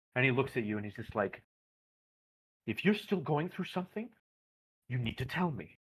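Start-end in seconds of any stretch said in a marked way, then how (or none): 2.7-5.7 frustrated, angry, stern and demanding tone. Voicing an employer who slams his desk and looks at the player: angry boss after slamming desk. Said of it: "he slams his hands onto his desk".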